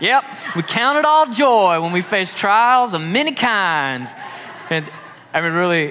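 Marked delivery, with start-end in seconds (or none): 0.0-4.1 put-on slow, high, drawled real Southern accent. Retelling what a cheerful man said during a disgusting cleanup: imitating Larry's Southern accent. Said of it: "that's an incredible impression".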